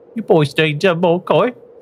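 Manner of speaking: very high, uppity, snooty cockney voice. Asked for their best Gundel voice, trying it again more uppity. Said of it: "A bit more uppity".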